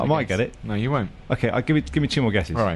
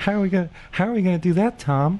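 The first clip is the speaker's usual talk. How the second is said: put-on girl voice, much higher; 9 semitones higher than usual. Playing the girl in a joking bit with a fellow speaker, funny girl voice. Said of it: "I'm being the girl".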